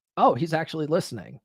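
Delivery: ordinary delivery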